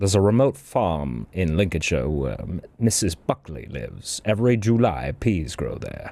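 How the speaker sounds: low, deep voice in an advertising copy read. Quoting a famous recording-studio blooper: Orson Welles impression. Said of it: "you're quoting Orson Welles', uh, greatest blooper".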